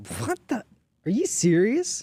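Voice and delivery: stunned disbelief, very high and loud.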